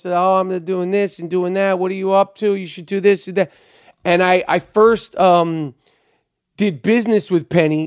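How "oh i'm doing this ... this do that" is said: relaxed, laid-back New York drawl. Retelling meeting Penny, who directed Big: Penny's laid-back New York drawl. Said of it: "real New York drawl".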